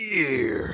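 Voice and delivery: gear exaggerated, overemphasized and drawn out. Correcting another speaker's impression: exaggerated stress on gear. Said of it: "you forgot to exaggerate the gear bit".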